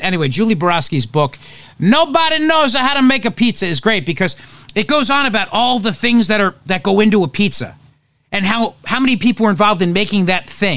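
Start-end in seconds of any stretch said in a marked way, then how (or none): 1.8-3.7 high-pitched Italian accent. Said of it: "you gotta say it in an Italian accent".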